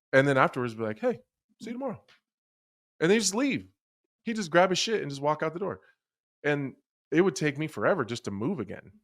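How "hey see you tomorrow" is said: very high, sweet, nice-as-pie cheery voice. Retelling what he said after a punishing practice: imitating him saying it nicely. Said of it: "he would say it so nice".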